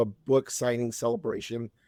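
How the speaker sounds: normal talking voice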